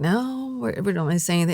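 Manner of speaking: ordinary talk, nothing marked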